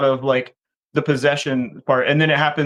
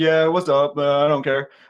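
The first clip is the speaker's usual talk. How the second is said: put-on careless, offhand voice. Retelling a scene where a guy answers the phone: imitating him. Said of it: "the guy answers, like".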